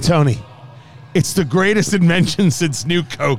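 ordinary delivery

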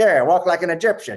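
put-on high, loud old-timey gangster voice.

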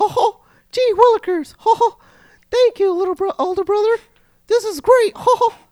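cartoonish voice, pitched way up and loud. Re-enacting how he sounded as a child, doing a Mickey Mouse voice. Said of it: "I guess I was Mickey Mouse when I was younger".

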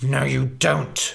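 growled words. Narrator reads the man holding her answering her, growled. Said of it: "growled the man holding her".

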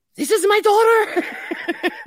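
put-on high, slow German accent.

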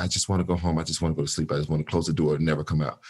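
soft, hushed, under-the-breath voice. Retelling what the mothers kept saying to the speaker: imitating someone half-whispering. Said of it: "constantly whispering to me".

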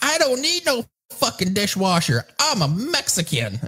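play-acted shrill, very high-pitched, swooping yell. Retelling what a neighbor woman yelled at a man, imitating her yelling. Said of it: "she's yelling at him".

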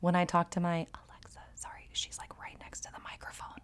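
fast, hushed whisper. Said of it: "so I don't wanna say her name too loud".

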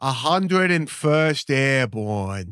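put-on Boston accent. A speaker tries out a Boston accent on a short phrase: put-on Boston accent. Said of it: "perfect Boston accent".

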